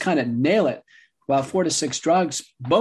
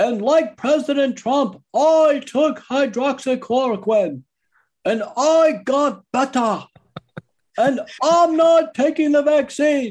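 loud, booming put-on voice; 10 semitones higher, 4 dB louder than usual. Retelling what an interview guest said about covid: Sebastian Gorka booming voice. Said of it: "he booms a voice".

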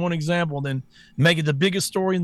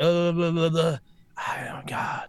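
mumbling, politician-style voice; 4 dB quieter than usual. Mocking a politician reading from a teleprompter: imitating Joe Biden reading teleprompter. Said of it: "He's like".

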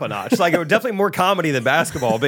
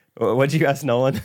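normal talking voice

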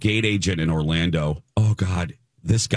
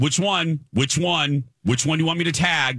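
put-on harsh, aggressive tone, higher; 10 semitones higher than usual. Retelling what a gate agent said at check-in: imitating an aggressive gate agent. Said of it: "He was very aggressive".

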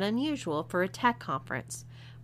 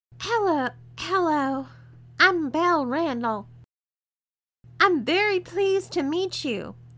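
very high, shrill, loud, screechy put-on girly voice; 9 semitones higher, 5 dB louder than usual. A man asked for his best girly voice introduces himself in a screechy girly voice. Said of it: "he screeched".

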